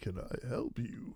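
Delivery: very slow, hushed, breathy villain voice, drawn out. Offering help to someone struggling to look something up, repeating it: Bane voice. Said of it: "Is that my Bane voice?".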